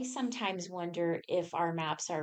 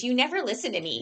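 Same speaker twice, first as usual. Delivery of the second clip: shrill, loud, flustered, exasperated woman's scolding; 6 semitones higher, 7 dB louder than usual. Retelling how the directions voice reacts when ignored, imitating a woman scolding her man. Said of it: "typical woman talking to her man that dismissed".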